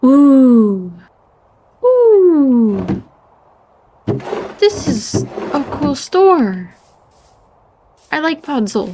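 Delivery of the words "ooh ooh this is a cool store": loud, drawn-out, thrilled gasp of delight. Streamer exploring a game finds a shop, gasping in delight.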